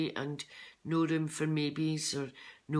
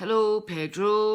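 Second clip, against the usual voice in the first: put-on Scottish Fife accent; 5 semitones higher, 8 dB louder than usual. Telling about your pet budgie Pedro, doing Pedro the budgie's Fife accent. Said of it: "in the Fife accent".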